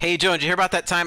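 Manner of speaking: ordinary talk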